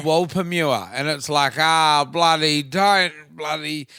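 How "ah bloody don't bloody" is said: put-on broad Australian chimpanzee voice. Recalling an eighties house paints ad: Wally Wolpermua voice, broad Australian. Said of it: "this chimpanzee with this broad Australian accent".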